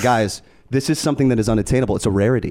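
ordinary talk, nothing marked

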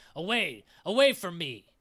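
loud, swooping, snarling monstrous dragon voice. Narrating a game, the dragon suddenly shakes its head, snarling.

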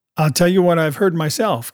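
ordinary delivery

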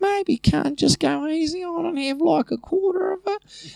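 very high, slow little Aussie bogan voice. Retelling what a friend said about the pills: Aussie bogan voice. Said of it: "classic little Aussie, like, wee bogan voice".

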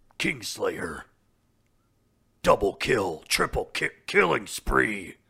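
slow, loud, booming game announcer voice.

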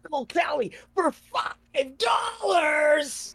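said with excited, enthusiastic energy. Showing how a line should be said, enthusiastic. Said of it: "You got to do it with enthusiasm. You got to be like".

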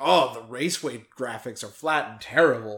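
plain

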